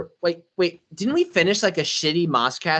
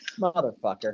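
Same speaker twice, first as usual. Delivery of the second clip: casual, offhand, throwaway delivery; 7 semitones lower, 6 dB quieter than usual. Imitating how someone else casually said the curse: imitating a casual curse. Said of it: "I think it was just casual".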